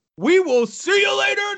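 shouted out high.

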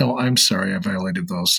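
put-on laugh while speaking. Retelling how a woman answered his question, imitating her laughing while talking. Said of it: "she laughed and she says".

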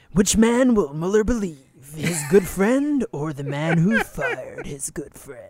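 put-on throat-straining reading voice. Reading a book's passage aloud in the author's voice: put-on throat-straining reading voice. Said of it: "written in this voice".

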